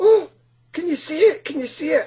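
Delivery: very high-pitched, startled screaming cry. Retelling a girlfriend seeing the glowing lights too: imitating her scream. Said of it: "she screamed out as well".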